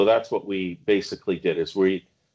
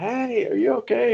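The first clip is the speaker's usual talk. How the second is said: acted, very high shout, stretched long. A senior medic retelling calling over to a younger medic, retelling a yell. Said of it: "and I'm yelling".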